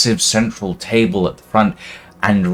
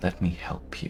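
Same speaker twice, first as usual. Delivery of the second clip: soft, gentle, hushed whisper; 3 semitones lower, 18 dB quieter than usual. A game master voices Silveria reaching a player's character, Silveria's gentle whisper. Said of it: "a gentle voice whispering".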